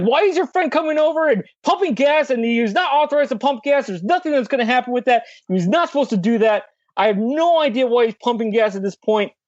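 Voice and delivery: high-pitched, angry, yelling, screaming rant. Retelling a gas station worker's complaint: imitating someone screaming. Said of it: "starts just, like, screaming at me".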